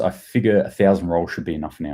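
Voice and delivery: ordinary talk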